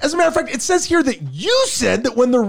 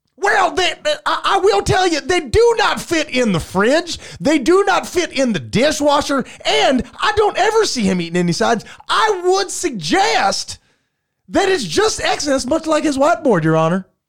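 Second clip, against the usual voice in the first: put-on Southern accent that keeps slipping; 3 semitones higher than usual. Arguing the plaintiff's case before Your Honor: wavering put-on southern accent. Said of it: "Just pick a southern state that you're from".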